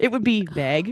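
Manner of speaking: Wisconsin-accented speech. Going off on a tangent about how words are said: weird Wisconsin accent. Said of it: "I totally went on a weird accent tangent".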